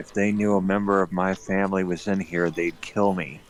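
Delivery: put-on whispered delivery. Recounting what a character replied in a scene, retelling a whisper. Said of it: "she just whispers".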